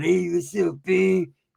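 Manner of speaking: very slow, tough, creaky gangster street drawl. Retelling how a friend greeted him later: imitating a gangster manner. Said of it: "That fool was all gangster".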